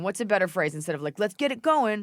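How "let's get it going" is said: plain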